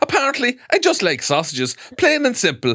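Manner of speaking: fake Irish lilt, very high, shrill and swooping. Quoting a man's words from a story, in a put-on Irish accent. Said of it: "now he's Irish".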